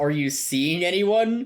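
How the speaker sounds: imitated awkward asking tone. Retelling a show scene where a character asks a question: imitating an awkward question. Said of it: "He very awkwardly asks".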